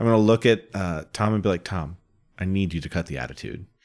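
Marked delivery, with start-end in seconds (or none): 1.6-3.7 very quiet, low, hushed aside. Speaking in character to another character during a game, in a lower, hushed tone. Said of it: "in like a lower, more hushed tone".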